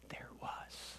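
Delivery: voiceless whisper.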